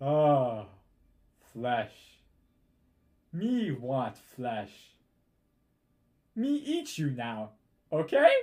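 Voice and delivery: loud, swooping, dazed, dumbfounded cyclops monster voice. Narrating a one-eyed horned creature confronting the players: dumbfounded monster voice. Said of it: "sort of in a dumbfounded voice".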